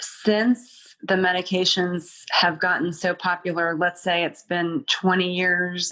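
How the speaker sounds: ordinary delivery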